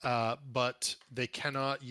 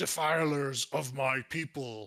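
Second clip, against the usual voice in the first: slow, enraged, bellowing shout in a giant voice; 3 dB louder than usual. Voicing a frost giant yelling at two hags: frost giant yelling. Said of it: "yells at the two hags in the water".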